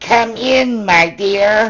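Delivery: very high, very slow, drawn-out voice. Reading a fairy tale, the wolf calls to the knocking girl in high voice. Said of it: "in a high voice".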